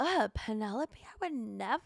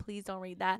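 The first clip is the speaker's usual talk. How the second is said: put-on pleading tone, lower pitch; 5 semitones lower than usual. Retelling a plea not to read the paper: imitating her begging. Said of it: "begging him".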